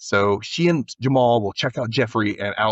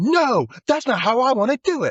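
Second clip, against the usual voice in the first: put-on yelling, higher; 14 semitones higher than usual. Retelling a girl's words to her sister: imitating someone yelling. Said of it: "She's, like, yelling it".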